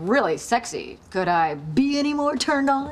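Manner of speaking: slow, drawn-out put-on man voice. Character explains she was acting out both sides of a conversation; Chandler voice. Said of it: "doing Chandler's side of the conversation".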